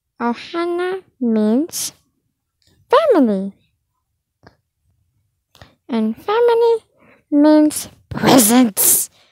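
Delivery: swooping cartoon character voice, pitch swinging widely. Doing a first take of a Stitch impression: Stitch voice. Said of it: "Take wind of Stitch".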